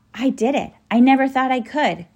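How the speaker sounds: amazed, wondering voice. On finally arriving, one of the group speaks with some awe. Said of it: "Ben said with some awe".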